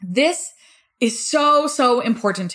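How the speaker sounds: full of passion, heartfelt, earnest emphasis. Explaining why answering messages and comments daily matters to them, passionate. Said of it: "You can probably hear the passion in my voice".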